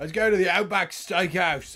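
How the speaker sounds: bad Australian accent. Suggesting where the team goes after the game: failed australian accent. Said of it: "I was trying to do an Australian accent".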